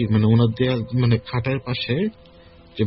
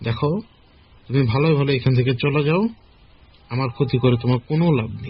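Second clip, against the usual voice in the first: ordinary talk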